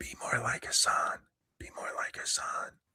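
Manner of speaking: put-on whispering. Acting out what a wife whispers in his ear at night: imitating a whisper. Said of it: "she whispers in his ear".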